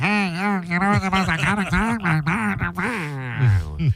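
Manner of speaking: mocking, put-on nasal voice. Replaying own words from a clip, imitating own nasal voice. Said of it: "I didn't realize how nasal I was".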